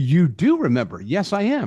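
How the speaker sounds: ordinary delivery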